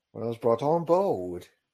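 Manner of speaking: put-on British accent. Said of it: "Here's the British accent for a moment".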